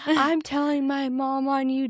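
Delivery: high, tearful, hysterical crying voice. Retelling how an upset girl yelled at her dad: imitating someone crying. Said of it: "just crying".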